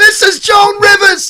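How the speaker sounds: very high, half-breathless celebrity voice. Doing an impression for the others: Joan Rivers impression. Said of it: "That's so good".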